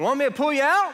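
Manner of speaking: put-on thick country accent, very high and loud. Stuck while camping with the kids, the speaker quotes a man in a thick country accent. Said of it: "Got a thick country accent".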